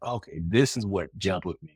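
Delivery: plain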